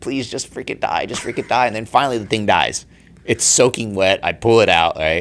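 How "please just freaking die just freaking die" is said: put-on sobbing, tearful pleading voice. Retelling holding a rabbit under the water, reenacting a crying plea. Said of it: "Like I'm crying".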